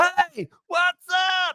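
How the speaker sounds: mock, very high-pitched scream. Recounting a phone call from the listener, imitating his screaming at a passing car. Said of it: "screaming at a car going by your house".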